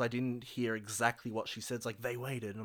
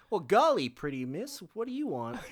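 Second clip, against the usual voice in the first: put-on high, old-timey 1950s man voice; 6 semitones higher, 3 dB louder than usual. Imagining dialogue for a coin-flipping guy in a scene, in an old-timey 1950s voice. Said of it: "I wish it was like very like 50s sounding dialogue".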